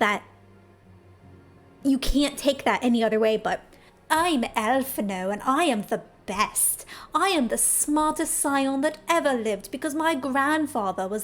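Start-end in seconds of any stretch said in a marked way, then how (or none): 4.1-11.2 voice dripping with scorn and derision. Speaker describing a game cutscene, doing a derisive Alfinaud impression. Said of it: "so much derision dripping off of his voice".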